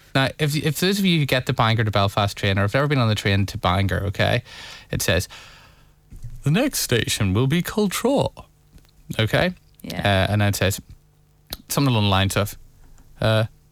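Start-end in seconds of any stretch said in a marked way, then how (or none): 6.5-8.3 sing-song, pitched-up, computer-generated announcer voice. Imitating the Bangor train's next-station announcement, in a computer-generated announcement voice. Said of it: "I know it's a computer-generated voice".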